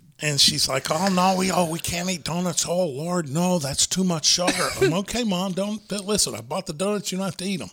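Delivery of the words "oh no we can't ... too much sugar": put-on upper Midwest Minnesota accent. Retelling what his mother-in-law said about the donuts he bought, Minnesota Fargo accent. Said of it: "they talk like they're from Fargo sometimes".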